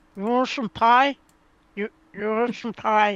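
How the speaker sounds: speech muffled, talking through a full mouth. Retelling a party story, the speaker offers pie to the person closest: mimicking talking with full mouth. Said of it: "I go with a full mouth and go".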